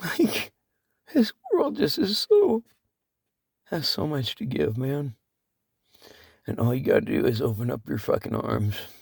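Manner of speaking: crying through the words. A speaker addressing listeners, openly crying while speaking. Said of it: "I'm crying".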